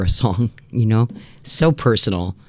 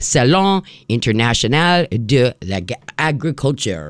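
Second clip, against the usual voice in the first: clumsy French pronunciation. A host gives the French name of a show, with a bad French accent. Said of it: "with my bad accent".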